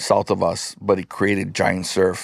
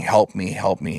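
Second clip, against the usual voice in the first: mock begging, imploring, pleading tone. Retelling a man stuck in the rip calling out to them, imitating someone pleading. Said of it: "he's pleading".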